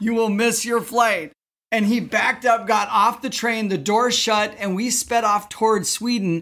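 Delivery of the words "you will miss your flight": put-on dead-serious tone, higher. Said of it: "as serious as anybody could ever be".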